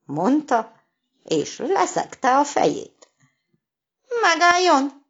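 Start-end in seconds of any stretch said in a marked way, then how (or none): 4.2-4.9 scared, high, raised frightened shout. Reading a story, Csucsu cries out to the goat threatening to butt: shouting in fright. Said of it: "kiabált ijedten Csucsu".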